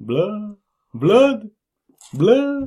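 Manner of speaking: put-on vampire voice. Showing what their own impression would be, vampire voice. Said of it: "Mine would just be like a vampire".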